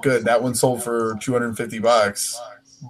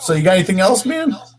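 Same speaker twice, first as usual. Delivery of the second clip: voice breaking mid-line; 8 semitones higher, 3 dB louder than usual. Talking with another speaker, voice cracking. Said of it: "My voice is cracked".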